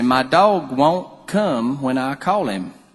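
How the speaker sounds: put-on real country accent, slow unhurried drawl. Retelling the mother telling the doctor about her dog, imitating Miss Lynn's slow country accent. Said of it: "she talked real slow, and she was real country".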